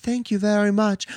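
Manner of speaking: coolly and calmly said. Retelling a scene with a goddess and a wizard, imitating a cool, calm reply. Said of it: "she says it just coolly and calmly".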